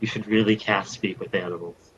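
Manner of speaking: soft, hushed half-whisper with no voice. Bringing the stag over to a companion, the character half-whispers advice: half-whispering. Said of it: "I'm gonna whisper to him".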